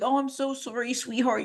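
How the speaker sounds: high, cooing, doting mother voice. Mocking a mom consoling her dieting son online: imitating a doting mom. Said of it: "for your mom to be like".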